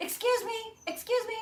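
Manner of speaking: shrill, very high, loud calling out. Shop owner retelling a lady calling out to her outside the shop: retelling a lady yelling. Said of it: "and she's yelling".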